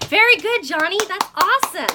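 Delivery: eager, enthusiastic voice, very loud and high. Showing how to praise a student named Johnny, enthusiastic raised voice. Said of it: "I only raised my voice when I was being enthusiastic".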